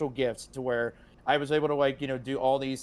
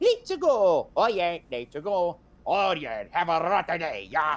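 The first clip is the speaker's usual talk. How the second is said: swooping, drawn-out character voice with swinging pitch; 4 semitones higher than usual. Retelling doing Mario voices to friends at lunch: Mario Kart character voice. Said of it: "I started doing my own thing".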